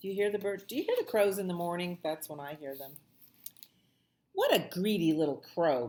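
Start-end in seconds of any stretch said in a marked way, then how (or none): 4.3-5.9 animated, growled grumbling. Narrator reading a story, voicing Harold about the crow, Harold's growl. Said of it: "growls Harold".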